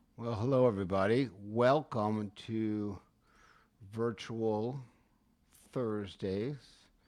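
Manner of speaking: very slow, unhurried, stretched-out delivery. Welcoming everybody to Virtual Thursdays while doing two things at once, speaking really slowly. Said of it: "I'm saying it really slow".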